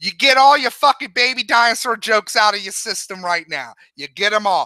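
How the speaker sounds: Boston- or Bronx-sounding accent. Speaker addressing everybody at once, unexpectedly slipping into a Boston or Bronx accent. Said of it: "why I'm going fucking, fucking like Boston or, or Bronx".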